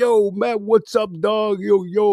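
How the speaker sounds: put-on full-on New York street accent. Quoting a very New York guy, in a Frankie Fisher New York accent. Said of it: "with the New York accent and everything".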